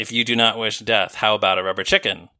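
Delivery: ordinary talk, nothing marked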